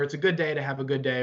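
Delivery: ordinary delivery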